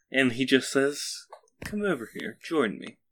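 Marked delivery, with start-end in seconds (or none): 1.6-2.9 put-on very old, elderly man's voice. Voicing a man in a wheelchair at a tea table, very old man voice. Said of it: "a very old man in a wheelchair".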